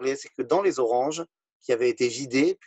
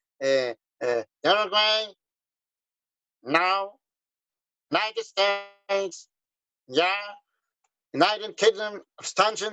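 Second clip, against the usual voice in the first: put-on nasal radio announcer voice, higher pitch; 4 semitones higher than usual. Telling listeners about the un vote, imitating the radio announcer's nasal voice. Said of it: "le speaker avec sa voix nasillarde comme ça".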